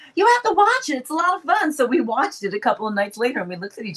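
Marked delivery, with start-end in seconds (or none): 0.1-1.7 put-on Texas accent, pitched higher. Retelling a friend asking about a movie: imitating Julie's Texas accent. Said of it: "she still has her, her Texas accent".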